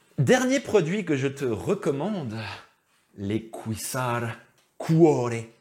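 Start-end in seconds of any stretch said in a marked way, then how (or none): 3.2-5.3 cuore said in a sudden put-on Italian accent. Recommending cycling shorts to viewers, the speaker names the brand: put-on Italian accent. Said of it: "je prends l'accent italien tout d'un coup".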